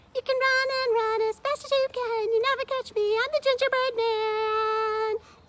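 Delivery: very high, loud storytime character voice. Reading a story aloud as another character comes along: Gingerbread Man character voice. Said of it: "I'm [name]. / My name's [name], / Join Mrs".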